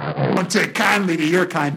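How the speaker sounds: heavy, loud Brooklyn accent, laid on thick. Describing how locals treat strangers, the speaker uses a thick Brooklyn accent. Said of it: "but in a thick Brooklyn accent".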